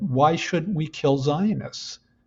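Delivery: ordinary delivery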